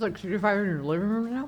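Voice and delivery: unclear, indistinct mumbled speech. In casual chat, the speaker asks a question, mumbling. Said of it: "I'm mumbling".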